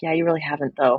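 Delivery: muttering under breath. Retelling a scene, imitating Leslie muttering under her breath. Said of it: "under her breath, she's like".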